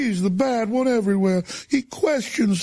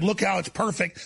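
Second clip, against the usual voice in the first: ordinary talk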